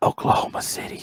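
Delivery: low-key, quiet, hushed murmur close to the mic. Naming a pick the speaker finds hard to say fairly, said quietly into the mic. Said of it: "I'm gonna say it quietly into the mic".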